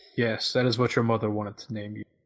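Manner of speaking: normal talking voice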